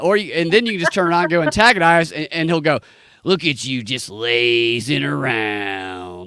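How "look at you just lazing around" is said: lazy, very slow, drawn-out, stretched taunting tone. Retelling what a game character says after you choose antagonize: imitating a game character insulting. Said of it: "And just starts insulting them".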